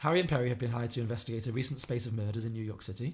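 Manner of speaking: usual speaking voice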